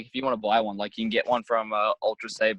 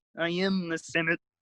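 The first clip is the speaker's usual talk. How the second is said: cartoon frog puppet voice, pitched up; 7 semitones higher than usual. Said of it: "I can do a very good Kermit".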